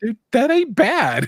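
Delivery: high, loud, impressed dad voice.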